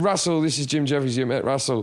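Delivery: plain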